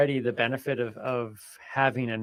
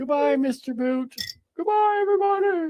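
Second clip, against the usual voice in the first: fake sobbing, mock crying, pitched higher; 4 dB louder than usual. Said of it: "He's crying".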